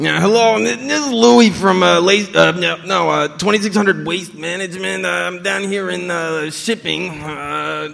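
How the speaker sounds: high, loud, raspy New York accent.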